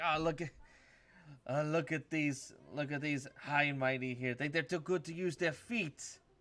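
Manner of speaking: aggressive monster voices. Voicing monsters taunting the party from a chasm: aggressive flame skull voices. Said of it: "'cause you hear three voices like".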